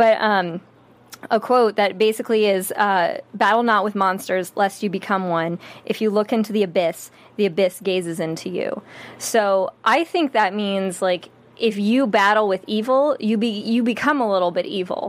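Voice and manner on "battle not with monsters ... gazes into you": ordinary talk, nothing marked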